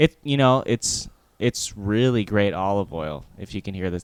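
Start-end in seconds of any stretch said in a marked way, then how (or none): 1.4-3.3 dripping with sarcasm. Praising a mob family's olive oil that people are forced to buy: sarcastic. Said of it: "the sarcasm in my voice".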